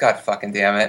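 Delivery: muttered under breath. Recalling seeing the first vampire in a bad movie, muttered under breath. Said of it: "under my breath".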